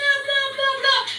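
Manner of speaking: high barking dog noises. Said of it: "Silas is yelling".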